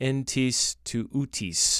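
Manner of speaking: phrase pronounced with a modern Greek accent. Quoting the Greek phrase behind a mistranslation, in a modern Greek accent. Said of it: "how I would say that with my modern Greek accent".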